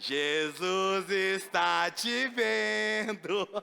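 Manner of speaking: strange low parrot voice, "vendo" stretched out. Telling a joke, the parrot finally speaks; strange voice of Zé the parrot. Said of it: "Com aquela voz estranha dele".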